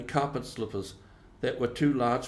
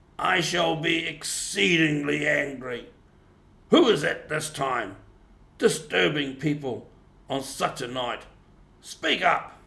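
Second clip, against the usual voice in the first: gruff, wary, suspicious voice; 4 semitones higher, 4 dB louder than usual. Narrator reads the Badger challenging visitors on a snowy night, gruff, suspicious Badger voice. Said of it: "said a gruff and suspicious voice".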